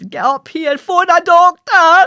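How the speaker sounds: shrill, very loud shout, pushed up an octave. Retelling calling to the mother again: imitating a louder, higher scream. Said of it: "lift it up an octave, make it a wee bit louder".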